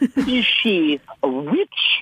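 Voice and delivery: very high, sing-song, swooping sketch-comedy voice. Declaring the rule for wondering whether anybody is a witch, Monty Python voice. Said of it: "without using your Monty Python voice".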